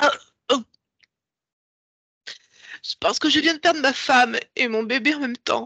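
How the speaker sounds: tearful voice, crying while speaking. Answering a guide who asks why they are crying: crying while speaking. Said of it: "Pourquoi tu pleures ?".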